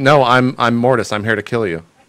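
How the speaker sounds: ordinary talk, nothing marked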